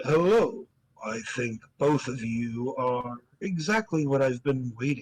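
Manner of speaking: deep, low put-on character voice. A game narrator voices a man who sits down and greets two people, deeper voice. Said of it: "he says in a deeper voice than I can reasonably do".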